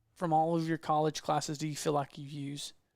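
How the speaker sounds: ordinary talk, nothing marked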